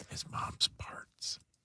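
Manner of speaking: hushed whisper, barely audible. Answering another speaker's question with a joke: whispering. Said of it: "it made it weirder that you whispered it".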